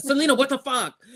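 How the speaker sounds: high, shocked, startled outcry.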